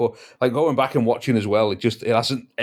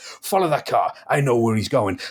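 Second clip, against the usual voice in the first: hammy put-on pantomime villain voice. Describing a TV actor's hammy acting to others, doing a pantomime villain impression. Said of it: "a pantomime villain".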